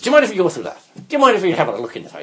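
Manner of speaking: put-on sing-song Irish brogue. Retelling what the tinkerers asked about the skip: tinkerer's brogue. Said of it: "in their brogue".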